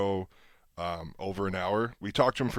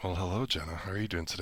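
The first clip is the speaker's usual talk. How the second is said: super creepy voice, quieter; 3 semitones lower, 9 dB quieter than usual. Greeting the co-host at the start of a podcast: super creepy voice. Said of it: "That was super creepy how I said that".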